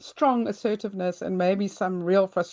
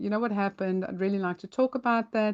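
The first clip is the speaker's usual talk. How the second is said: put-on very calm, even-tempered, quick-paced voice; 3 dB quieter than usual. The speaker acts out a voice note sent to him, retelling a calm voice note. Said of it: "I'll say to him very calmly".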